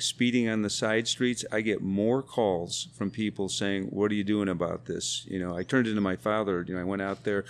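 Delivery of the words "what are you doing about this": plain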